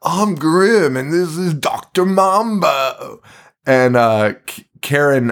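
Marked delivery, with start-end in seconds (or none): 0.0-3.2 high, slow, crazed madman voice, Mambo stretched. Retelling a film scene, quoting a character: imitating someone talking like an insane person. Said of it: "he's talking like an insane person".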